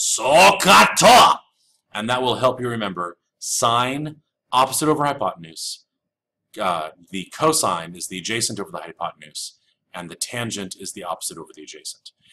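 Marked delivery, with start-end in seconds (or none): 0.0-1.4 shrill, rough, very loud, high battle scream. Teaching a trigonometry mnemonic, loud samurai war cry. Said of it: "say that really loud like a samurai warrior".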